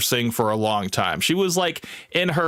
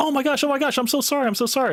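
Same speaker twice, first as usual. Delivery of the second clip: very high, frantic, pitched way up; 13 semitones higher than usual. Retelling how the server apologized after a complaint, imitating a frantic apology. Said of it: "in like a frantic".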